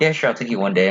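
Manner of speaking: ordinary talk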